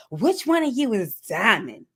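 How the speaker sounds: demanding, sassy tone loaded with attitude. Retelling a mother's entrance into a shop: imitating someone with an attitude. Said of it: "sounding like she has an attitude".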